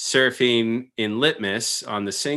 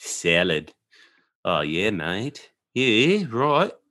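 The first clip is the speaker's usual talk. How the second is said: clumsy, bad, butchered fake Australian accent. Asked whether he can talk Australian, trying it out, bad Australian accent. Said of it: "I'm doing it really bad right now".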